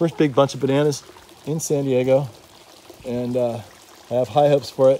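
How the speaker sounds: ordinary talk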